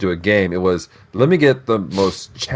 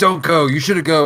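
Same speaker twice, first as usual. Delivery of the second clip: put-on, almost angry tone, pitched higher; 7 semitones higher than usual. Retelling the storm expert's warning not to go: imitating someone almost angry. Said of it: "she's almost angry at them".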